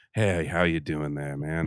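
slow, seductive, laid-on-thick delivery. Describing an actor's usual screen manner: seductive slow Swayze impression. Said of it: "the usual Swayze, uh, you know, kind of seductive, slow".

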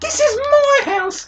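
very high, slow, dopey dim-witted voice. Watching a match with friends and quoting a line: silly idiot voice. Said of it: "Why do you say it like an idiot?".

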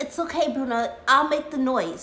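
ordinary delivery

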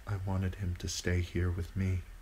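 soft-spoken. Lady Stark speaking to John, softly. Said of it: "Lady Stark said softly".

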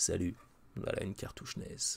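low, soft, big mock radio DJ voice.

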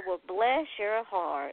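sweetly sarcastic, slow, honeyed Southern drawl. Showing how a southerner drags out the phrase: dripping with sweet sarcasm. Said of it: "just let it drip like, like honey from your mouth".

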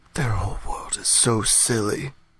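very quiet, hushed, low volume. A player's character speaks aside to another character, very quiet. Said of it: "I like very quietly say".

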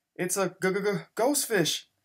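frightened, fearful, high-pitched and slow. Reading a friend's reply after the friends fled a cave screaming, fearful. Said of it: "Sheldon replied fearfully".

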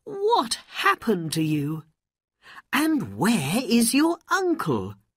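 cried out in an exclaiming way. Aladdin's mother, happy to see him come home, crying out. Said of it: "she cried".

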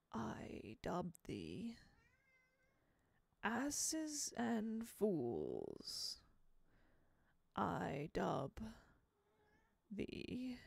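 hushed, murmured, swooping dead man's voice. Reading a story aloud, voicing the old man with the sword: Mr. Electrico's dead man's voice. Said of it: "I'm trying to do a dead man's voice".

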